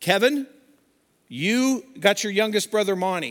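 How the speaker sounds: steady, firm, calm but stern acted delivery. Retelling a man's instructions to the kids on a small boat, quoting a calm but stern voice. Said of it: "in a calm but stern voice".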